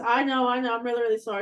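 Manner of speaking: speaking while cracking up with laughter. Retelling a pilot's apology over the PA: imitating someone laughing while talking. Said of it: "he started laughing".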